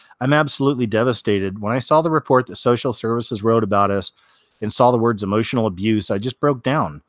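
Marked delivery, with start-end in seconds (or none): none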